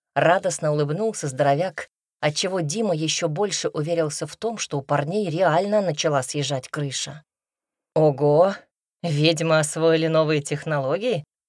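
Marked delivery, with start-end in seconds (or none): 8.0-11.3 smirk in the voice. Narrator reads the artist's reply to the big man, smirking. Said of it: "усмехнулся художник".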